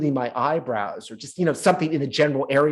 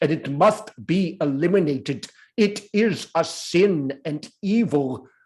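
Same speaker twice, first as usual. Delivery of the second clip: put-on rich, believable, slow South African accent; 3 semitones higher than usual. Remembering a classmate's stage role about apartheid, the speaker imitates Doug's South African accent. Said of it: "he had this great South African accent".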